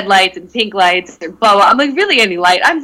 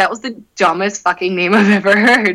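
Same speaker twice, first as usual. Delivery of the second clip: ordinary delivery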